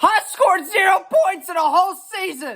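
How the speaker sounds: genuine, furious, very high-pitched angry yell. Reacting to a claim about the championship's prestige: angry yelling. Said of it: "I'm actually yelling today".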